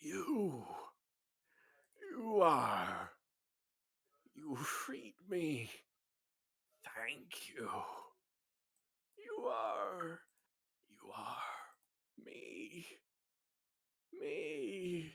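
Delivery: very slow, tired, weary, scratchy, swooping voice. Narrating a scene, an owl-like creature speaks to the one beneath it; tired, weary, scratchy voice. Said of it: "an almost tired, weary, scratchy voice".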